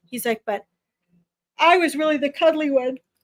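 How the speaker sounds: speaking through a yawn. Tired speaker relaying what another person said, yawning. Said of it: "sorry, guys. Yawning".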